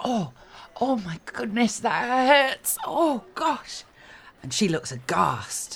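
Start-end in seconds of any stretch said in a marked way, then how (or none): 0.0-3.8 very high, put-on, faked cries of pain. Looking up at a young lady after a staged fall: faking pain. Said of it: "look up at the young lady and go".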